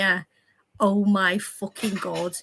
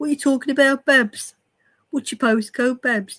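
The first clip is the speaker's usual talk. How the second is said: typical everyday Brummie Birmingham accent; 4 semitones higher, 5 dB louder than usual. Showing off accents to the others, now doing a Birmingham accent. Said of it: "I could do Birmingham".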